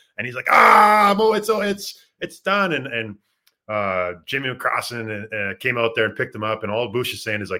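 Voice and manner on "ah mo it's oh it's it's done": loud, very high, very slow drawn-out wailing scream. Retelling how a teammate lay on his back screaming: imitating a teammate screaming. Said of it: "he starts screaming".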